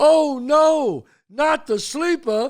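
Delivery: high-pitched, loud mock yell with laughter. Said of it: "we would all yell".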